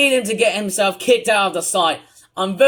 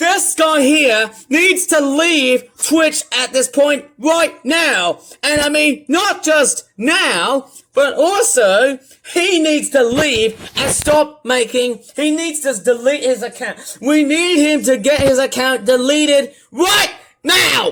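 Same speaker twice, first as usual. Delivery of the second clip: very angry, insistent, pitched-up rant; 6 semitones higher than usual. A streamer calling out another user on stream, very angry. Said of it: "sorry if I have to sound very angry".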